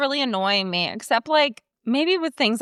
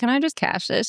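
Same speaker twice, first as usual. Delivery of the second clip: plain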